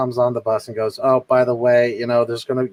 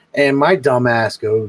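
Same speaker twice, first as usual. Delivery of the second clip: ordinary talk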